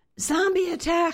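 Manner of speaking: piercing, shrill screech, pitched very high. Narrator reading a girl's line as she lunges forward, screeching. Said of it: "she screeched".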